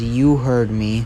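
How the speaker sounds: mock stern, firm, unbending tone. Retelling a scene where Deku answers Endeavor, imitating Deku's stern voice. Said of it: "in the stern voice".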